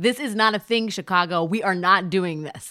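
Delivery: ordinary delivery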